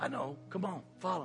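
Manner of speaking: quiet, still, small voice. Telling listeners what Jesus says in reply, Jesus in a small soft voice. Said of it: "small, soft, still voice".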